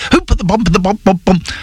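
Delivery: hurried, high-pitched, rattled-off voice-over reading. Recalling a timed voiceover script, the speaker acts out rushing it fast. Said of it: "Trying to do it fast".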